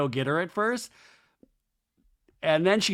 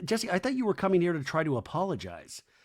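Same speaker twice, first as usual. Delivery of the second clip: ordinary talk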